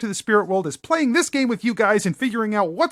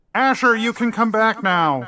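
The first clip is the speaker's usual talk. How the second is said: calling out to someone far away. Narrating a scene as Patrick calling to Asher, in a loud echoing voice. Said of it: "increases the volume of his voice".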